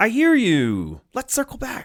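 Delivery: very high, scripted, sing-song customer-service tone. Speaker demonstrating what fake listening sounds like, in a nonprofit customer service voice. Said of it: "That's nonprofit customer service voice".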